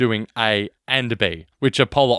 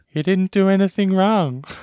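put-on high little young boy voice; 9 semitones higher than usual. Re-enacting a scene from The Dark Knight, young boy voice. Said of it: "my young boy voice".

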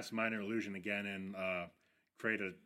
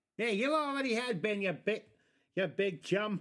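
put-on old man without dentures, New York accent; 12 semitones higher, 6 dB louder than usual. Voicing a character while others question the accent; toothless old New Yorker voice. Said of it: "New Yorker accent meant old man who misplaced his dentures".

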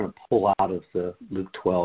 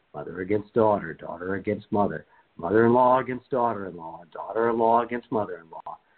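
ordinary delivery

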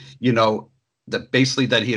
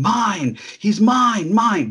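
mock baby tantrum scream, very high, very slow; 11 semitones higher, 3 dB louder than usual. Describing a man reduced to a petulant child, retelling a screaming tantrum. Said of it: "just screaming".

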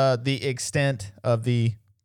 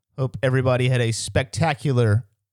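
plain

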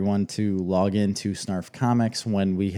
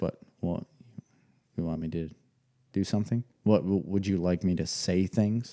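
mock super-serious kid voice, quieter; 5 dB quieter than usual. Describing how a serious kid answers when asked to talk: mimicking Grady, super serious. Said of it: "stare at you blank-faced and just like super serious face".

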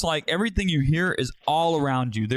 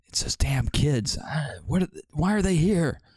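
distant muttering to himself. Game narrator voices someone heard muttering off in the distance. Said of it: "you hear some muttering off in the distance".

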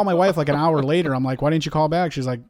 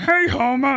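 squeaky, very high-pitched cartoon-style voice; 10 semitones higher than usual. Speaker shows how he started an impression, doing a Barney impression. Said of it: "I started with a, a Barney".

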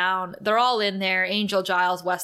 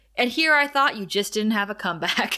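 ordinary talk

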